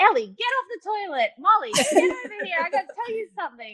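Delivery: high-pitched yelling. Retelling calling sisters over on a video call: retelling yelling through the phone. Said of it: "yelling at them through the phone".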